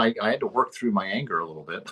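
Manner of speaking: usual speaking voice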